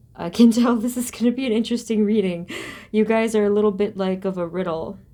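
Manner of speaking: amused words spoken through a light half-laugh. A tarot reader begins a reading for viewers, talking with a slight laugh. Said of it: "I'm only kind of laughing".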